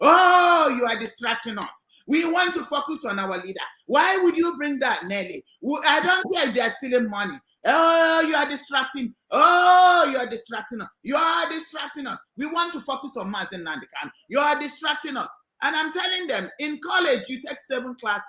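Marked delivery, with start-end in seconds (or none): none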